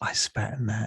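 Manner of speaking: close, leaning-in whisper. Playing a little girl who sets down a bowl and whispers: whisper. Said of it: "she whispers in your ear".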